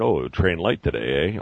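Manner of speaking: put-on sarcastic tone. Describing gym gawkers who comment on his lifting, mimicking gawkers' sarcasm. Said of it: "with sarcasm".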